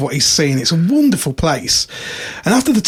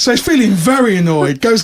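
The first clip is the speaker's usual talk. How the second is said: ordinary talk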